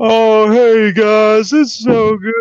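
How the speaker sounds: bad, slow-talking voice, every word dragged. Pretend Hacksaw is on the phone greeting the guys, in a bad, slow Hacksaw impression. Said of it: "he's all slow or something".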